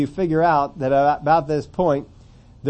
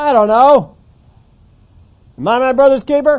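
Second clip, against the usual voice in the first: very high, loud, mocking sarcasm; 10 semitones higher, 8 dB louder than usual. Showing how the brother's answer to God might have sounded: sarcastic. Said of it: "He could have had a lot of sarcasm in it".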